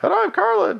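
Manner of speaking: high-pitched squeaky comic voice.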